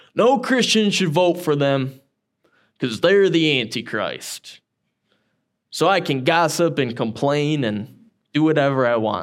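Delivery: put-on Southern American accent. Mocking people who label opponents the Antichrist, in a Southern accent. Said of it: "Sorry for the Southern accent".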